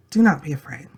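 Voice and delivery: soft, gentle, slightly whispered voice. Showing how to read the line aloud: soft and gentle, a little whisper. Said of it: "Just read it that way".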